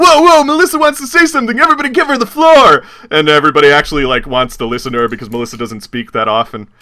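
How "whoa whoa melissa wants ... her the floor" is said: high, loud, eager upbeat host voice. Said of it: "Forrest is like".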